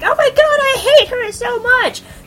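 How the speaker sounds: high, loud mock outrage.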